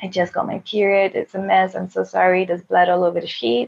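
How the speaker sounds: imitated tearful voice. Retelling waking a partner and apologizing: retelling own tearful apology. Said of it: "tearing and crying".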